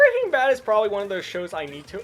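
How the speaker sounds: voice cracking partway through. Talking with another person about tv shows: voice cracking. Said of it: "I just had a horrendous voice crack there".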